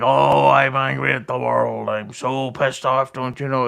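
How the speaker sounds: mocking, ridiculing put-on voice. Mocking how Karmic keeps acting angry: mocking Karmic impression. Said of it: "he's like".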